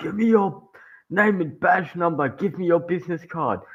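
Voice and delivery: high, raging, yelled, screaming put-on rant. Retelling how a man spoke to the cops: imitating someone screaming. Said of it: "screaming at these guys".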